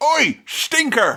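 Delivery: very high-pitched, taunting, name-calling tone. Retelling how Sam calls Gollum names: imitating Sam. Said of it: "Sam is busy calling Gollum names like".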